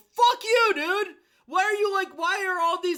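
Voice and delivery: high, loud, frustrated and exasperated rant.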